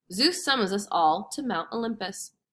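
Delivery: ordinary delivery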